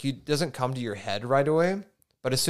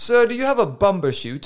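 loud, high, inaccurate, fake British accent; 7 semitones higher, 7 dB louder than usual. Joking about a word that sounds British: put-on British accent. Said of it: "We're gonna get so much crap for our accent".

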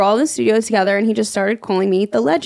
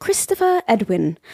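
put-on British accent. Saying a name aloud, unexpectedly in a British accent. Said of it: "I don't know why I'm saying it in a British accent".

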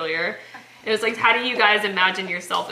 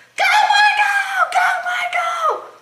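mock very high, shrill, drawn-out cheering yell; 6 dB louder than usual. Retelling cheering at the kids' little soccer league, yelling as a soccer mom. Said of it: "I was yelling".

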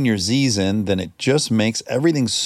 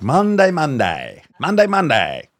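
put-on blended British-Australian accent, drawled; 3 semitones higher than usual. Trying out an accent on a word: put-on British-Australian mix accent. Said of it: "a mix between British and Australian and neither".

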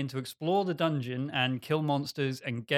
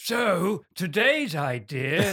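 put-on loud elderly man's voice; 4 semitones higher, 5 dB louder than usual. Introducing today's game idea to the group, in an old man voice. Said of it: "That's my old man voice".

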